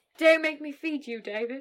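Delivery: deliberately awful put-on British accent. Hosts trading deliberately bad accents for fun, deliberately bad accent. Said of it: "These are just so bad".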